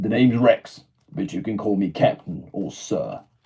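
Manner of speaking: low soldier voice. Trying out a clone character's introduction, in a bit deeper voice. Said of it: "I need to get probably a bit deeper there".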